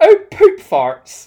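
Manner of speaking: put-on thick, shrieking Bristol accent. Telling a co-host what a woman said when something went wrong: thick Bristolian accent. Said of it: "in a thick Bristolian accent".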